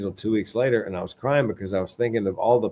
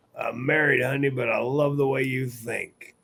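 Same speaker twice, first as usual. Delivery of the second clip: pained voice, forced through hurt; 4 semitones higher than usual. Retelling answering a nurse while having a heart attack: imitating speaking through pain. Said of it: "through the pain to the end".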